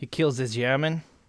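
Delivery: put-on Russian-sounding accent. Retelling a film scene to another speaker with a put-on accent sounding russian. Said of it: "That sounds almost Russian".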